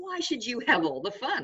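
high, giggly, said with a giggle. Reading a story, a small girl answers her brother: with a giggle. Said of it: "With a giggle".

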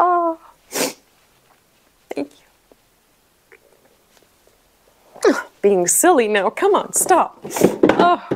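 tearful, high-pitched voice, crying while speaking. Ending a puzzle video and thanking viewers, crying. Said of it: "I don't know why I'm crying".

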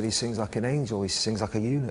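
ordinary talk, nothing marked

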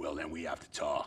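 very low, deep, rumbling bass voice. Retelling what a band leader said next: imitating a rumbling voice. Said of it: "he rumbles".

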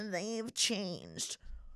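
put-on weird, belittling, condescending, negative tone. Imitating people who say someone has changed, mock-condescending tone. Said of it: "in a condescending, weird, like negative way".

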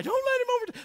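mock very high, shrill yelling scream. Telling a race story, the speaker quotes a man screaming at an older runner; imitating someone screaming. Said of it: "He's screaming at the guy".

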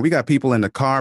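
ordinary talk

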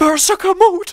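high, loud, thrilled excited yell.

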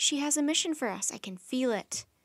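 ordinary delivery

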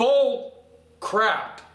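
strong, forceful outburst. Condemning preachers who ask for money: strong, forceful outburst. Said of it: "Sorry to be so strong about this".

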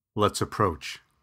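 ordinary talk

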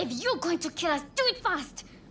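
high defiant yell.

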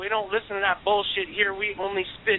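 ordinary talk

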